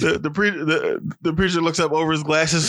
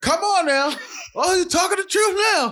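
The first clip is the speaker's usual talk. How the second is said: mock shouting, much higher and slower. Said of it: "They shout back on the".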